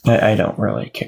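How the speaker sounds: sheepish, hushed, meek. Pressed by others to tip big, replying: quiet and sheepish. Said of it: "He said quietly and sheepishly".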